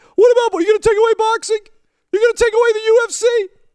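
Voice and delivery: very high, loud, triggered, outraged rant. Mocking a counterargument about fighting in hockey; Triggered Guy voice. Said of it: "That's Triggered Guy voice".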